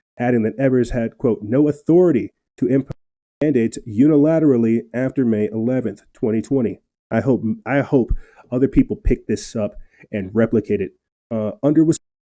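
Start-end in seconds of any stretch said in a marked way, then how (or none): none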